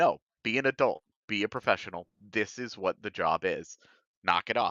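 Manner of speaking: ordinary talk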